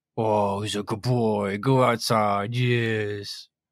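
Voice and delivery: very slow, drawn-out, mocking "yes". As the listener slips outside through the door, an anarch calls after them, mocking voice. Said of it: "the mocking voice of an anarch".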